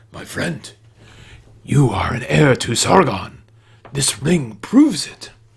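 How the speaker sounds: low near-whisper. The tavern keeper grabs the adventurer's hand and speaks in a low near-whisper. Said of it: "His voice lowers almost to a whisper".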